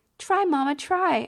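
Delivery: put-on high, cutesy, childlike baby-talk voice. Mother repeats what her little one says: baby voice. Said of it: "She says it in a baby voice".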